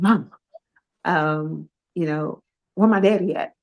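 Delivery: worried, anxious, hurried fast talk. Mother retelling her son's late-night call asking for his dad: imitating son sounding anxious. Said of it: "he sounded very anxious".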